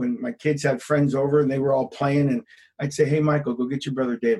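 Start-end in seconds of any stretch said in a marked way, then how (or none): 3.0-4.4 put-on soft-spoken, angry tone. Father recalls calling his son while the kids' friends were over, retelling a soft-spoken mad call. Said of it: "The softer you speak".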